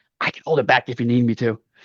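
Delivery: stage whisper meant to be overheard. Voicing a dog who puts her paw up beside a player, stage whisper. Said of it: "says like in stage whisper".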